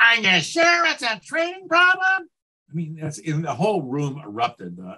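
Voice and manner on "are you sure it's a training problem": put-on whiny voice, much higher pitch. Retelling a keynote speaker's example of what not to say to a client, mock-whiny voice. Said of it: "in your whiniest voice".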